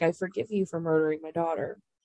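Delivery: ordinary delivery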